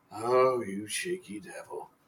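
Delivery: soft, slow, drawn-out half-whisper. A game narrator voices a character who looks back at you: half-whispering. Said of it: "he just looks back at you and whispers".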